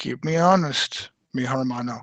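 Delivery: very honest, sincere, slow, earnest tone. Voicing a character addressing another: sincere in character. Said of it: "very honestly and very sincerely".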